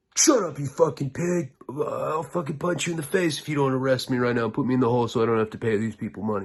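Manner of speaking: restrained, acted-out cussing yell. Telling a prison story, acting out an inmate answering a cop, retelling an inmate's yell. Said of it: "a cop will be like".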